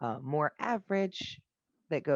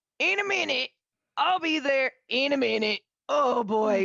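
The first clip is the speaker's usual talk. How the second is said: very high, shouted yell; 12 semitones higher, 8 dB louder than usual. Voicing a ranger calling out from an outhouse: yelling from an outhouse. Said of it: "you hear a voice yell from the outhouse".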